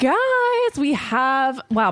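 voice cracking, high-pitched, very drawn out. Podcast host starts introducing the guest to listeners; voice cracking. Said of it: "my voice just cracked".

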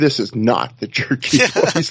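put-on calm, very unsatisfied. Imagining the listener sitting sedately in a living room: mock calm, very unsatisfied. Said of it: "and just calmly saying".

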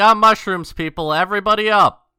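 very loud rousing yell, pitched very high. Warning the sleeping party in character: in-character yell. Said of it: "I am going to yell".

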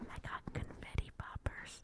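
very soft, slow whisper. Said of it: "I'll whisper it".

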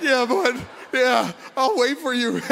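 play-acted hard crying, bawling and sobbing through the words. Speaker retells answering while driving, retelling her own bawling.

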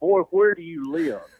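preacher-like southern drawl. Retelling the coach confronting him across a table, Coach Alford's southern drawl. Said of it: "he had that really southern drawl like a pastor".

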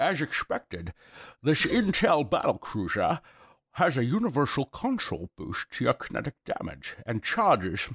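comic book supervillain voice. Reading a promotional line aloud for the others: Bane voice. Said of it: "Sounded like Bane".

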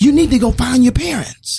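mock very high, shrill hollered yell. Retelling what Dad yelled out at them: retelling Dad's yell. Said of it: "Dad, why are you yelling?".

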